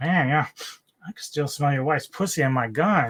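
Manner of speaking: sarcastic taunting tone. Speaker recounts a film scene, quoting Mosley taunting two prisoners: retelling Mosley's sarcastic taunt. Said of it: "he does it like in a very sarcastic way".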